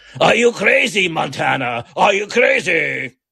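slow, drawn-out voice, as if throat clogged. Doing an impersonation with the voice of food stuck in the throat: Robert Loggia impression. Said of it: "my Robert Loggia impersonation".

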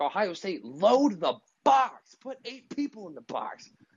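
toned-down, mild, high hollering yell. Retelling watching the game, retelling screaming at the TV. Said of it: "I'm screaming at the T V like".

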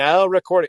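loud automated robotic bot voice, announcer style. Quoting the recording bot from the old podcast setup: imitating the Craig recording bot. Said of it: "Craig, which is like".

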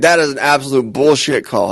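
normal talking voice

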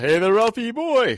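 loud, high-pitched calling out. Quoting a remembered comedy skit: imitating Eddie Murphy's Honeymooners skit. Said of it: "he had a Honeymooners, uh, skit".

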